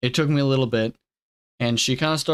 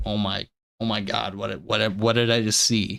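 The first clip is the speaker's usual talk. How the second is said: put-on frightened voice, much lower; 3 semitones lower than usual. Speaker retelling the moment of seeing something in her bed: retelling own fearful reaction. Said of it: "fearful look in my eyes and in my voice".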